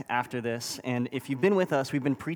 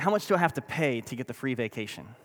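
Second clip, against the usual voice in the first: play-acted, needling, sarcastic tone. Retelling own reply to a clipboard lady offering a free vacation: sarcastic reply. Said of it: "I sarcastically responded".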